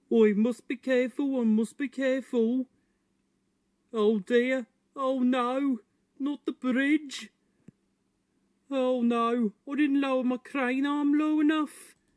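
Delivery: put-on high-pitched Birmingham accent. Playing the Ned voice from a link: Birmingham accent Ned voice. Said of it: "what accent is that again?".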